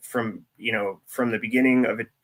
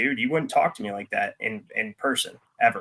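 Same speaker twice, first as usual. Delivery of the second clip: ordinary talk, nothing marked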